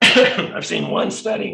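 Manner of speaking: voice catching in throat. Speaker explaining a study's results while choking, throat catching. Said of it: "Sorry, choking up on".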